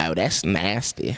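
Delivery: put-on low-pitched cartoon character voice. Asked by the other speaker to do Cleveland Brown, answering in a Cleveland Brown voice. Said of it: "Let me hear Cleveland Brown".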